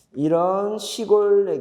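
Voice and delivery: very slow, deliberate, carefully paced delivery.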